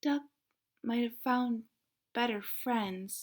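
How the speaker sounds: small, sad, sorrowful half-whisper. Reading a story aloud, giving the cat's line in a sad little half-whisper. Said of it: "Cat whispered in a sad little voice".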